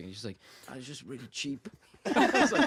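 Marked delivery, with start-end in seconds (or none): 0.7-1.7 put-on gangster voice with Italian-American accent. Recounting a chat about Serbian cornflakes, the speaker imitates Mirza's gangster accent. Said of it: "He used to sound like a like an American Italian gangster".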